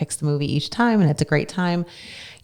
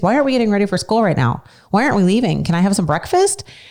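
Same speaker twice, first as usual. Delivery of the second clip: put-on bewildered, puzzled little child's voice; 4 semitones higher than usual. Retelling a sleepwalking child walking up late at night: imitating Jaden sounding confused. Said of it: "he's all confused".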